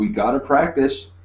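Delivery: calling out across a distance. Closing in on an attacker during a sword fight, yelling. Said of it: "I am yelling".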